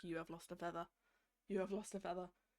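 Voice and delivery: very deep, soft Scottish burr. Imitate the man telling someone who lost the trial about their feather, very deep scottish accent. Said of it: "in his very deep Scottish accent".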